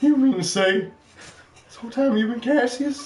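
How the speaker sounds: squeaky very high voice, dawning realization. Answering a request to impersonate someone realizing two wrestlers are the same: Terry Funk impression. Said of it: "can you do an impression of Terry Funk".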